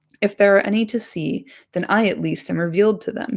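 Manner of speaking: plain reading voice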